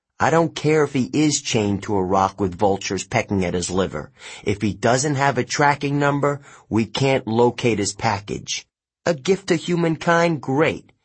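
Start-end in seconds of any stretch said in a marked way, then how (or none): none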